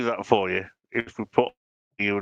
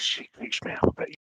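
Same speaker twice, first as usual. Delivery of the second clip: hushed, whispered aside. Whispering in character to Miss Fish about Maggie: whispering in character. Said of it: "I whisper to Miss Fish and say".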